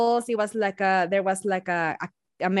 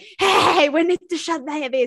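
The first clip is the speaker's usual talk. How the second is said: play-acted, high-pitched yell; 7 semitones higher than usual. Retelling calling out to friends: imitating yelling at friends. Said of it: "yelled at my friends".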